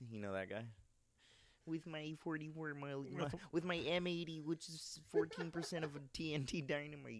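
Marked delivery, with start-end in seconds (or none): 1.7-7.2 gloating, pitched-up cartoon-villain alien voice. Talking about favorite cartoons with friends, doing a Marvin the Martian impression. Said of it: "you sound just like him".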